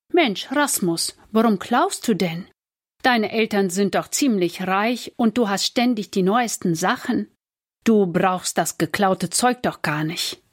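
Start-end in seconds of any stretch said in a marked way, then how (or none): none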